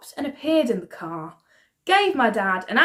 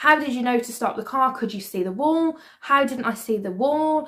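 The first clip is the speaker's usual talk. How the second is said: normal talking voice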